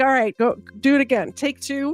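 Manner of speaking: amused police officer tone. Imitating the cop pointing his body cam at her: imitating the cop filming her. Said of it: "pointing his body cam at her, like".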